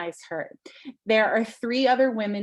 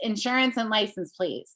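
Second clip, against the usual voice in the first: put-on put-upon, curt, thoroughly annoyed, can't-be-bothered tone. Quoting the woman behind the glass asking you for insurance, imitating an annoyed voice. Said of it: "in the most annoyed voice possible".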